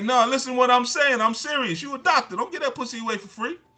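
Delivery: very high, very loud, shrill, blunt delivery. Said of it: "And he's like".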